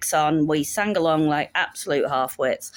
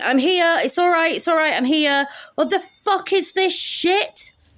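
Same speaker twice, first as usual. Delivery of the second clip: put-on high, belted, drunken Scottish girl voice. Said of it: "I can't do a Scottish accent, I'm sorry".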